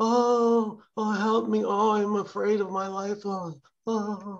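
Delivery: wailing ghost voice. Recalling a bit he does, the speaker mimics a ghost's voice. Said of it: "he mimics the ghost's voice".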